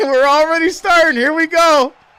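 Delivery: loud high-pitched yelling.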